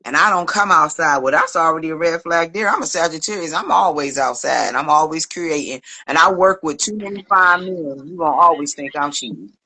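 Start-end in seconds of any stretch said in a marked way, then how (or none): none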